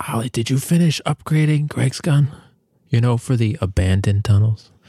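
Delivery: hushed whisper. Leaning over to another player during a game, the speaker whispers a question. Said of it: "I whisper in his ear".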